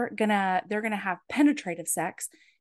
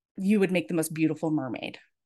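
put-on awed, worshipful, reverent delivery; 5 semitones lower than usual. Retelling a story's love scene, the man speaks: retelling a reverent line. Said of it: "this really reverent way".

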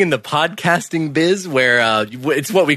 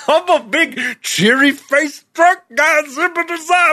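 goofy, dopey put-on voice; 12 semitones higher than usual. Describing a cheery-faced drunk right-hand man: dopey character voice. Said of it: "That is an exact impression of what he sounds like".

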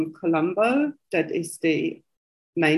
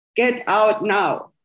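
put-on firm, authoritative, commanding voice; 3 semitones higher than usual. Speaker on a bus retells hearing a voice from nowhere, in a booming voice. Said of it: "I hear this booming voice".

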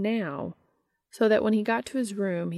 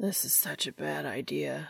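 put-on drunkenly slurred, lower and quieter; 4 semitones lower, 6 dB quieter than usual. A drunk man pulls back from taking another man upstairs, drunkenly slurred. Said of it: "he slurred".

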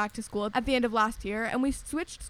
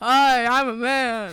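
booming, very loud, slow, drawn-out manly voice; 9 dB louder than usual. Showing their one impression used for all men, in a put-on manly voice. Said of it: "I have one impression for all men, and it's just".

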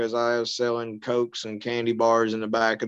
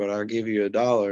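ordinary talk, nothing marked

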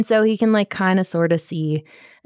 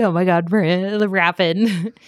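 put-on slow, weepy, tearful, overcome crying voice. Retelling a book scene where a character reunites with a prince: imitating someone crying. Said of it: "she starts crying. She's like".

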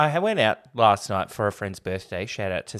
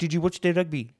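put-on South African accent, higher; 8 semitones higher than usual. Retelling the time he pretended to be South African: fake South African accent. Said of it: "I pretended to be South African".

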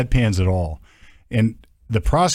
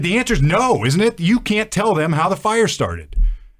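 put-on, very high, very loud, all-out screaming; 10 semitones higher than usual. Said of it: "That's as loud as I've ever screamed".

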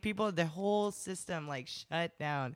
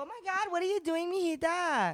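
very high-pitched mom voice; 10 semitones higher than usual. Speaker who loves accents shows how their mom talks, imitating mom's accent. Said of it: "my mom talks like this".

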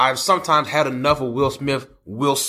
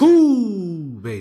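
terrible put-on Nigerian accent with drawn-out who; 4 semitones higher than usual. Mocking an actor's accent in a movie by quoting it: bad Nigerian accent impression. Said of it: "Who talks like".

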